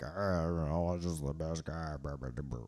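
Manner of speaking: deep put-on voice, dropped very low. Imitating how Belichick thinks about it: Belichick impression. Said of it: "That's a good impression".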